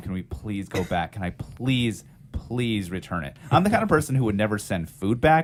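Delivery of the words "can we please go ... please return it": put-on earnest, pleading, begging tone. Retelling how the speaker begged their mom: imitating own past begging. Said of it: "I begged my mom".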